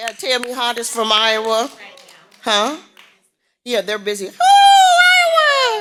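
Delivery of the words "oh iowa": very high, very loud, drawn-out oh exclamation. Calling out states at a gathering, imitating Tammy's voice. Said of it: "That's in my best Tammy voice".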